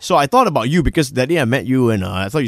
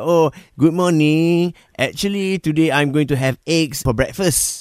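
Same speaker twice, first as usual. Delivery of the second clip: speaking with Malay accent. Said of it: "I put on a Malay accent".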